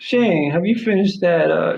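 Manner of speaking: put-on mimicked Southern accent. Retelling his mother-in-law asking him at Thanksgiving, imitating a Southern accent. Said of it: "She has like a Southern accent".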